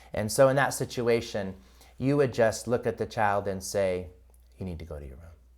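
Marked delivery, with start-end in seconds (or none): 4.6-5.3 deep, very low, hushed and serious voice. Showing how to tell a child to go to their room: voice dropped low. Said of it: "you see how my voice just dropped".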